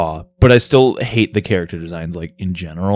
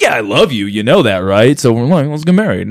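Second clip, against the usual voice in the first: put-on casual, offhand tone, higher; 5 semitones higher than usual. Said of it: "in the most cash way ever".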